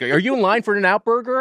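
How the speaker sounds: full-on, acted, high-pitched confrontational holler. Retelling confronting a couple of teens in their car, acting out yelling at them. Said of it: "And I'm just fucking yelling at them".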